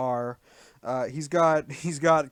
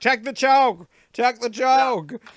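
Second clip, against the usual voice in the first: loud, shrill, urgent shout; 9 semitones higher, 7 dB louder than usual. Retelling a wrestling broadcast, imitating commentators shouting at the ref. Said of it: "shouting at the ref".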